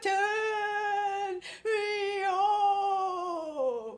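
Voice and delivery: put-on, loud, very high moan, stretched very long. Telling a ghost story, the graveyard voice calls to mr. jones again, louder moaning. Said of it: "then it got louder".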